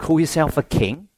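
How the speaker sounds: plain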